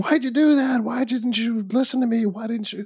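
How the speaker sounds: very high, reproachful screaming. Retelling a movie scene where one character screams at another: imitating someone screaming. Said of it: "screaming at him".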